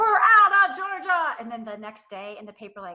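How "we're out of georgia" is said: mock very high, shrill, stretched-out shriek. Retelling how a company announced it was leaving: imitating Netflix screaming.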